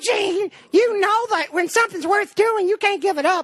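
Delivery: very high-pitched voice. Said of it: "She's like".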